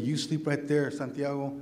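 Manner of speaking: ordinary talk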